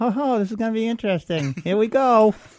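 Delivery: very high, hushed ventriloquist mutter with still lips. Retelling how a wife at the sink muttered: imitating muttering without moving lips. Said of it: "they don't open their mouth".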